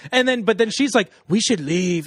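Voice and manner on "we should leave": put-on whispered female voice. Retelling how a narrator voices the women: imitating whispered female dialogue. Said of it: "whispers their dialogue".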